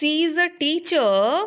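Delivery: pitch climbs on teacher, left unfinished. Explaining intonation, the speaker shows an unfinished sentence: rising tone. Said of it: "my tone is rising".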